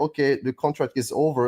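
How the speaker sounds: ordinary talk, nothing marked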